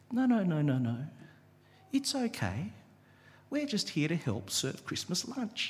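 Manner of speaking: softest teddy-bear voice. Retelling what a man said in reply, in the softest teddy bear voice. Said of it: "in like the softest teddy bear voice".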